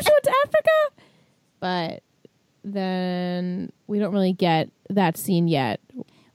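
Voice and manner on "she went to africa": very high-pitched squeal of shocked disbelief. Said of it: "We're like".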